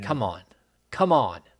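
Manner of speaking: loud, annoyed, fed-up, upset tone. Complaining about fantasy basketball league rules: upset. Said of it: "You sound upset".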